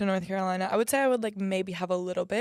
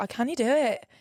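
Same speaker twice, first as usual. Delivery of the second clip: put-on Scottish accent, said quickly; 4 semitones higher, 3 dB louder than usual. Asked who is harder to understand, speaker imitates Scottish people: Scottish accent impression. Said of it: "Scottish people are like".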